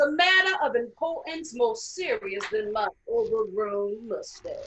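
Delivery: preaching delivery, projected outward. Acting out a sermon to King as her congregation: imitating King preaching. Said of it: "Throughout her speech, King is her congregation".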